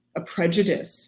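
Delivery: ordinary talk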